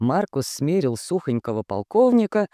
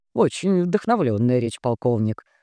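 plain reading voice

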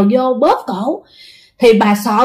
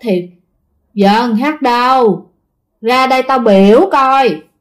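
gloomy, rumbling, eerie, droning ghost voice. Telling a story, voicing the strange voice the old woman heard: eerie droning voice. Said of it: "nghe nó rền rền, mà nó âm u".

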